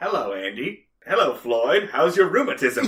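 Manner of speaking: put-on robotic voice. Describing how a man comes in, the speaker imitates him: robotic voice. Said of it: "almost robotic way he comes in".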